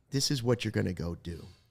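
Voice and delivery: quiet whispered voice. Imagining coaching someone on exactly what to do, whispering in his ear. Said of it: "I'm I'm whispering in his ear".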